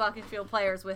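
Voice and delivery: ordinary talk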